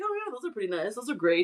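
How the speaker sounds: soft, offhand, acted casual nonchalance. Retelling being shown something from a bag, retelling acting unexcited. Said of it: "you're trying to not look all like crazy".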